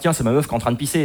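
ordinary talk

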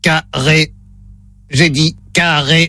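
flat, low, synthetic robotic machine voice. During a phone line test, the speaker plays the robot in a robot voice. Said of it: "Voix de robot enclenchée".

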